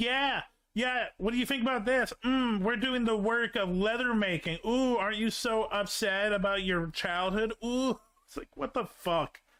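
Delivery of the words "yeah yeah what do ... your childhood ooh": put-on jeering, needling taunting voice. Imagining the rebelling townspeople insulting the duke: imitating mocking townspeople. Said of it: "I'm just imagining just this town be like".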